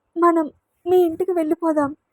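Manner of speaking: fearful and hesitant. Reading a novel, a frightened girl asks to go home: timid, frightened. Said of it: "అంది బెదురుగా".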